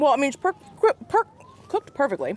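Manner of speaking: flustered stammer on per-. Tasting a brioche burger and praising how it is cooked, stuttering. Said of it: "I'm, I'm stuttering".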